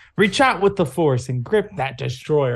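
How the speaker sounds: high-pitched mock half-scream, mild yell. Describing a frustrating stretch, quoting Koda's repeated urging: Koda's voice, mock screaming. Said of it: "Koda's just screaming at you with like Koda's voice".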